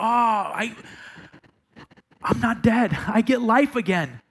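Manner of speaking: slow, full of sheer relief sinking in. Acting out the woman's words after she is spared: relieved. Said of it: "just relief".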